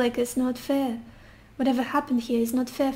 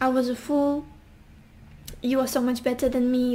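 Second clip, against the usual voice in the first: normal talking voice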